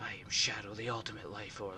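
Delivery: flat put-on voice. Speaker explaining how Shadow always talks, doing a flat Shadow voice. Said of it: "Shadow has a very flat voice".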